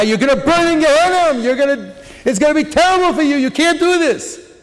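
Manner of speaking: heated, high-pitched screaming. Retelling how he screamed at a man in the street: imitating his own screaming. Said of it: "I was screaming at the guy".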